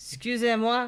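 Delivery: put-on Cajun accent. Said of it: "the closest I can do is a Cajun accent".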